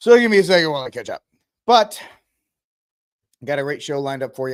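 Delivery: out of breath, rushed, winded talk. Opening episode 43 after running up the stairs, the host speaks out of breath. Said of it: "I'm out of breath".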